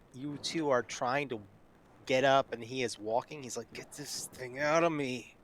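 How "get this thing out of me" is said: clenched jaw, words pushed out through gritted teeth. A game narrator voicing a character walking alongside two others, through gritted teeth. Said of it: "he says through gritted teeth".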